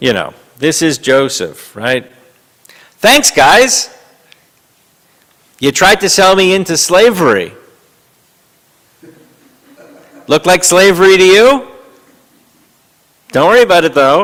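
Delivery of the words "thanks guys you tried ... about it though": put-on sarcastic biblical figure voice, higher and louder. Showing how the Joseph line could be read: imitating Joseph sarcastically. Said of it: "We could read this a little bit, um, sarcastically".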